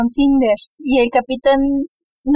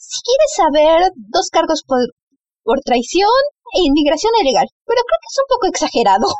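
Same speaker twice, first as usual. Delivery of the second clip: heavily sarcastic, acted out, with swooping pitch; 4 semitones higher than usual. Recapping a story, the speaker voices a character answering a questioner, retelling a very sarcastic reply. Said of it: "Cinder le responde muy sarcásticamente".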